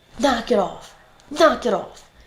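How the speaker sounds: slow, drawn-out scolding Italian mother voice. Retelling how her italian mom scolded her as a kid: imitating her italian mom scolding. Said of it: "'cause she's Italian, all the Italians do this".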